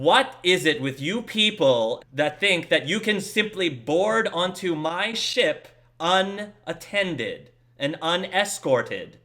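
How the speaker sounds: loud, furious, authoritative commanding yell. Game narrator voicing a towering female captain confronting people boarding her ship, authoritative, furious yell. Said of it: "very authoritative and furious voice".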